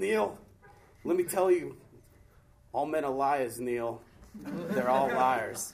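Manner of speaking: put-on accent of the Northeast. Quoting something a man once told him, in his Northeast accent. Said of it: "in his Northeast wonderful accent".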